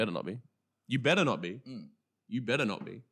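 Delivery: teasing, playfully menacing, said three times. Co-host jokingly warns the other not to steal his segment, mock threatening. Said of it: "Don't threaten me on the podcast".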